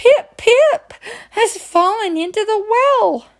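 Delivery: very high pitch, words gasped out breathlessly. Narrator reads the boy Chang answering his mother, gasping out the words. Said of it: "he gasped".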